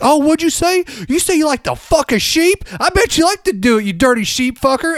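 shrill, high-pitched, taunting scream. Retelling how they'd react in front of the entire school, retelling screaming at someone. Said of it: "I'd start screaming like".

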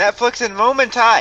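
sudden blurted call cutting into the room. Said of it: "that was way too loud".

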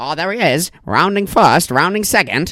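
put-on old-style baseball announcer call. Describing how a man talks, the speaker mimics him: old baseball announcer voice. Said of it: "he talks like an old baseball announcer".

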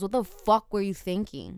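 normal talking voice

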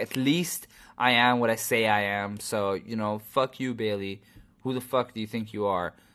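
ordinary delivery

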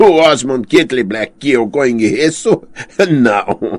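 bursting out laughing, speaking through guffaws. Replying to another man's claim about a knight, he bursts out laughing. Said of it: "Jaime soltou uma gargalhada".

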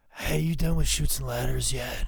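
gruff put-on voice of a small preschool child. Imagining him as a preschooler, speaking in a gruff Brian Pillman voice. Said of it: "imagine him having a gruff voice as like a preschooler".

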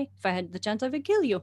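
put-on Russian accent. Retelling what a plant said to them: imitating a russian accent. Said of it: "in this, like, Russian accent".

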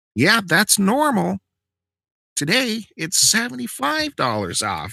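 high, slow, insistent voice.

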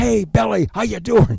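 put-on very high, raspy, creaky teasing holler. Retelling a coworker's teasing across the stage: imitating someone yelling across a stage. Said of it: "he would yell across the stage".

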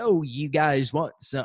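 generic put-on Chicago accent. Retelling a man who was lying to them: stereotypical chicago accent. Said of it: "the most like generic kind of stereotypical accent for Chicago".

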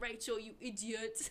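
put-on English accent. Retelling a jab at a friend who kept missing, English accent. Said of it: "it was a good English accent".

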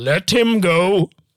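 commanding, compelling tone. Retelling trying a mind-control command on the desk agent: commanding Voice from Dune. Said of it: "Used the voice, like in Dune".

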